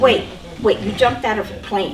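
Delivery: ordinary delivery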